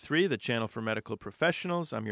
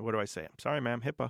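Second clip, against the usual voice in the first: ordinary talk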